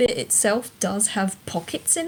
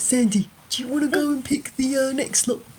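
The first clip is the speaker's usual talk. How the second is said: fake stage whisper; 4 semitones higher than usual. [name] leans in to Sandy during a dress-up performance, mock whisper. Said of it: "kind of mock whisper".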